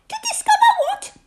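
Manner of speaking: very high, nervous, worried, anxious voice. Told of an expedition to discover something, a listener asks back: anxiously. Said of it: "Said Piglet anxiously".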